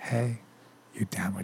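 put-on eerie whisper. Acting out someone creeping up to whisper in an ear: imitating a creepy whisper. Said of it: "creep at you and whisper in your ears".

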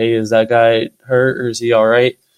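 plain

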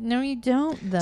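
ordinary talk

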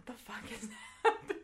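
laughing through the words, confused-sounding.

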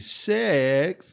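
"sex" with swooping up-down loop on e. Imitating how a man says a word: loop-de-loop on the e in sex. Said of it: "He just does that loop-de-loop on the E".

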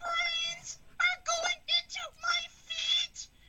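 very high, slow, stubborn villain voice.

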